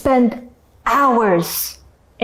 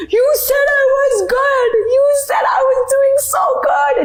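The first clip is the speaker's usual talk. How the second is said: very high, tearful sobbing voice. Recounting a call to a hindi teacher from a rickshaw, the speaker reenacts crying on the phone.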